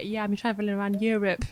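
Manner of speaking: mocking, sending-up put-on voice. Imitating people who say they travel around Europe: mocking imitation of travellers. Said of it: "it's like when people say".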